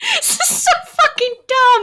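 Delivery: very high, laughing through words. Introducing the show to a co-host, laughing while talking. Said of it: "I'm already laughing".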